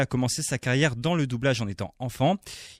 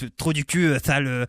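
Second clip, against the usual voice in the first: put-on cartoon character voice. Showing how the cartoon character talks, in Titeuf voice. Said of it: "Titeuf qui parle un peu comme ça".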